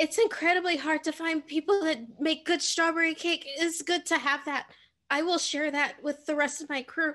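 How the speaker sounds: choked-up, high, tearful voice on the verge of tears. Thanking the enchanter for the strawberry cake, sounding tearful. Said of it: "Are you crying?".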